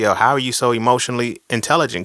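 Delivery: normal talking voice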